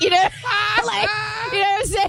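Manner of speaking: cracking up, high, laughing through words.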